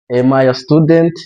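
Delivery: question-like rising pitch at the end of "student". Teaching English questions in Kinyarwanda, rising pitch on student. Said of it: "Notice that my intonation goes up".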